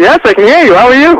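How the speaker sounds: all-out loud, high-pitched yelling and screaming. Answering the host over the phone line on air: screaming. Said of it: "why are you screaming at me?".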